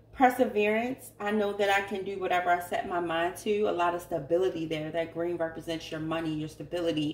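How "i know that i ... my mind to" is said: usual speaking voice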